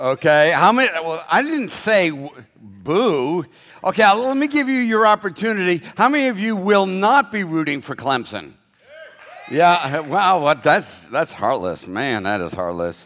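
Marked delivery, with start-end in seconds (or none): 10.6-13.1 deep, low, playful teasing tone. Speaker to audience members not rooting for Clemson: teasing. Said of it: "I'm only teasing you".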